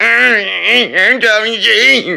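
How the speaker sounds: small, high, rasping creaky voice with drawn-out I'm. Showing viewers how the other streamer sounds: imitating another streamer's voice. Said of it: "that's how he sounds".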